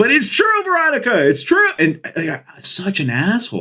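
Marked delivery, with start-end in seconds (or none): 0.0-1.7 loud, very high-pitched, blurted out. Telling how he answered a girl who shoved him; retelling saying it loudly. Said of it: "I just loudly said".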